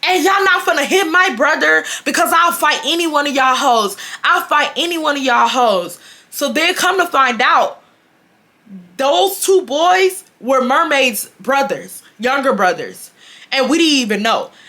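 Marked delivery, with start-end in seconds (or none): 0.0-6.0 acted, heated half-yell, mild in volume. Retelling a hallway fight, imitating Mermaid screaming threats. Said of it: "Mermaid is screaming".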